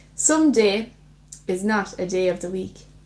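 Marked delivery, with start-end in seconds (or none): none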